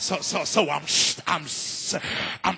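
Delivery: fake stuttering. Acting out a preacher whose mouth doesn't match his mind: fake stuttering. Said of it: "I'm stuttering trying to get this out".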